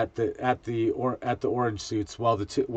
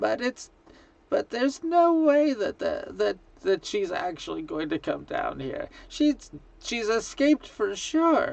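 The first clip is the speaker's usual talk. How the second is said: put-on old gnome lady voice, much higher; 9 semitones higher than usual. A voice heard after switching over to a channel, old lady gnome voice. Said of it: "an old lady gnome voice say".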